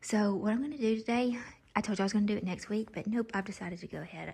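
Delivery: speaking in a hushed whisper. Filming a home update while the child sleeps in the next room, whispering. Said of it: "I'm whispering because he's in there asleep".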